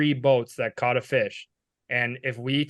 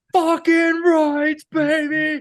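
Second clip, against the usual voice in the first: very high, shrill, loud screaming yell; 7 dB louder than usual. Retelling a big fish catch, yelling at a nearby boat: imitating own screaming. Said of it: "I start screaming at the boat".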